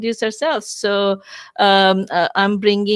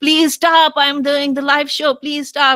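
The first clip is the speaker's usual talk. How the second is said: desperate, pleading, begging scream; 6 semitones higher than usual. Speaker recalling calling from upstairs to loud people cutting outside, retelling screaming please stop. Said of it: "I was screaming to them".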